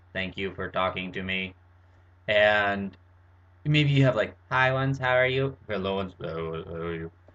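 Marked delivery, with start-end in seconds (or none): 0.2-1.6 speech-modulator machine voice, robotic vocoder sound. Explaining that everyone uses speech modulators, demonstrating the result: vocoder speech voice. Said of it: "something that kind of sounds like this".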